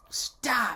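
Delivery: mock very high, sudden, sharp snapped shout. Retelling how a date suddenly snapped during tickling: imitating someone snapping. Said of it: "she snapped and went".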